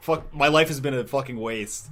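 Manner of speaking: plain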